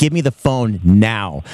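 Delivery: low, slow, dead serious tone. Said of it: "She got so serious".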